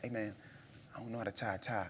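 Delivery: very quiet whispered aside. Retelling asking Hassan for help with a tie in a packed room, retelling a whisper. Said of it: "I'm like whispering".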